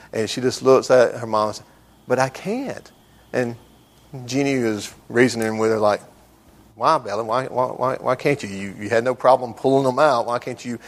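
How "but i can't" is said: put-on soft, sweet, innocent little-girl voice. Retelling how Bella answered her mom, imitating Bella's sweet innocent voice. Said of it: "in her sweet little innocent voice".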